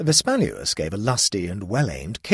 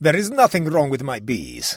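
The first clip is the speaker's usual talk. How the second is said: haughty, superior regal voice, high-pitched; 6 semitones higher, 4 dB louder than usual. The king answers the royal librarian about his bees, haughty. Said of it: "said the king haughtily".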